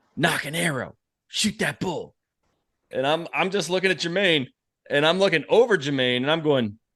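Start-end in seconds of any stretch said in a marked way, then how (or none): 0.2-2.2 hushed half-whisper. Retelling a hunting partner's words beside the elk: imitating Jermaine's half-whisper. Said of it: "Jermaine whispers to me".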